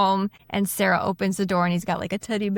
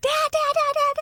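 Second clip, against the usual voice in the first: put-on very high, shrill, scared child screaming. Narrating a story, ten-year-old Michael calls for his dad, screaming Michael voice. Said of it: "Michael is screaming".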